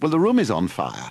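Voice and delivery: ordinary talk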